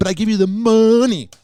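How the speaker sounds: put-on Miami-accented voice. Imagining a Miami cop talking to his wife: imitating a cop's Miami accent. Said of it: "He's got that accent in Miami".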